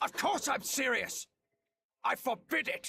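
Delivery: furious, very high, angry yelling. The professor answers someone pressing him for answers: angry yelling. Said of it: "Would you stop yelling at me?".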